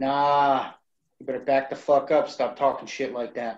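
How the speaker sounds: aggressive, hostile, confrontational tone. Confronting a character in a game scene: aggressive. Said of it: "I approach Mitt in a very aggressive way".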